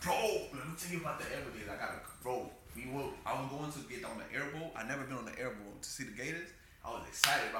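ordinary talk

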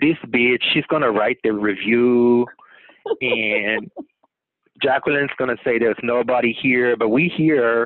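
put-on Spanish accent in a roach voice. Speaker voices the hotel roaches talking in the wall, Spanish accent. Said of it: "Do you like how I made it in a Spanish accent?".

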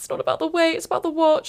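put-on tearful broken voice. Retelling how the speaker started crying when someone hugged them, retelling crying. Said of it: "And I start crying".

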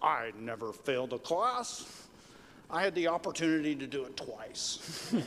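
put-on British accent. Retelling Churchill's answer when asked about failing a class in elementary school, Churchill's British voice. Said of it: "in his British voice".

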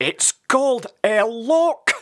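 angry shout, very high, slow, drawn out. After Radic laughs at him, Sid shouts back at Radic: shouting back angrily. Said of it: "Sid shouted back angrily".

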